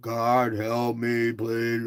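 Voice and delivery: flat, dull delivery. Speaker shows a group the kind of prayer to avoid; dull monotone prayer. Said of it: "this dull".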